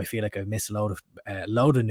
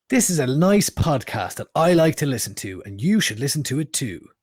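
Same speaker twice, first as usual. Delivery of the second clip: radio announcer delivery, raised and higher pitch; 5 semitones higher, 5 dB louder than usual. Co-host models what listeners should say when sharing the podcast, radio announcer voice. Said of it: "That's the radio voice".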